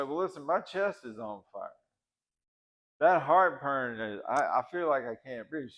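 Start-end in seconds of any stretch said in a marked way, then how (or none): none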